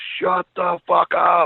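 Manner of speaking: furious high scream at top of lungs, rough, drawn out. Retelling how a wrestler broke character: imitating a furious scream. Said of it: "screams at the top of his lungs".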